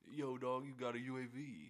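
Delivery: very slow delivery with every word drawn out. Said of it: "I just heard about the [name] voiceover".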